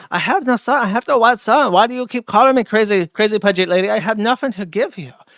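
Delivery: loud put-on Korean accent. The speaker imagines a Korean man named Moon answering back, in a Korean accent impression. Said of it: "somebody out there who's Korean who's like".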